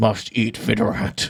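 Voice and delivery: giant lizard voice, muttering under its breath. Voicing a giant lizard pushing past a gate: giant lizard muttering under its breath. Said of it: "in lizard under its breath".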